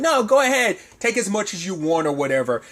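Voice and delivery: put-on overly generous, sarcastic, sing-song tone. Retelling a dad's offer of pancakes: imitating a sarcastic offer. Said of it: "If you wanna be a sarcastic prick".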